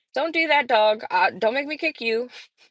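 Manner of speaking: normal talking voice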